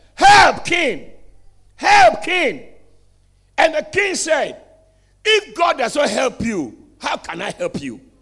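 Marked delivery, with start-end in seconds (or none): 0.2-2.7 put-on woman's voice, high, loud, drawn-out shout. Retelling a story, the speaker acts out the woman crying to the king: imitating a woman shouting. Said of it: "And then the woman shouted".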